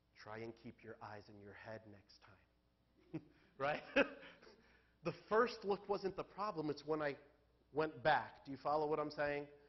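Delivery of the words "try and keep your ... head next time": soft, low whisper. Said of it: "he whispers in my ear".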